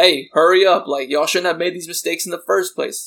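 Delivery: hostile, confrontational, aggressive, pushy tone. Retelling a customer demanding the staff hurry up: imitating someone speaking aggressively. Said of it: "starting to aggressively be like".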